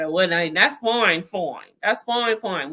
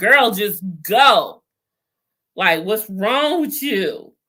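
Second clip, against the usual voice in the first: put-on loud yelling. Retelling yelling at a character on the TV: imitating own yelling at TV. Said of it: "I really was yelling at her".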